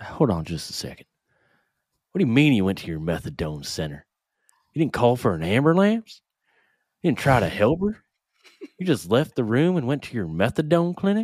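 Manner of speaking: put-on Southern accent. Reading a cop questioning a witness in a put-on southern accent. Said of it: "my inner South".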